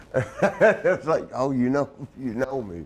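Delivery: ordinary talk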